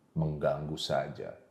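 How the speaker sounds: very low, scornful, cynical villain sneer. Showing how a main villain talks without anger, cynical villain tone.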